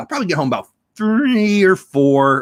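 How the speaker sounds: voice slipping into a cartoon frog puppet sound. Describing the day's schedule, the speaker's voice comes out sounding like Kermit the Frog. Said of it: "I sound like Kermit there".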